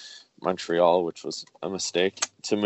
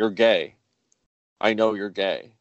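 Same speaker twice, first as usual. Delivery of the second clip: acted impatient, exasperated shouting outburst. Retelling how a mother lost patience on the phone: imitating her shouting. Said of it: "she starts shouting".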